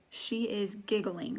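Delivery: ordinary talk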